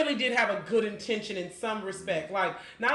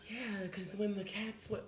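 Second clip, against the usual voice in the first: put-on soft, sweet voice, quieter; 11 dB quieter than usual. Mocking a woman accused of killing her husband: soft sweet voice imitating Carole Baskin. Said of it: "talks in a soft, sweet voice like that".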